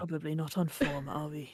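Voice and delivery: muttering under breath. [name] answers Zug's question about what is wrong with everybody, muttering. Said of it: "[name] just mutters".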